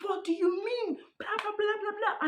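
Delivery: very high, furious, angry yell. Retelling a boyfriend exploding at his girlfriend: imitating someone yelling angrily. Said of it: "he's yelling, he's angry, he's annoyed".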